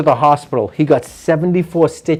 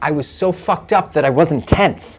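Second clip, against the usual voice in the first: ordinary delivery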